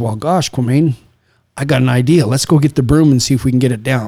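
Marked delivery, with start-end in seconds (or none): none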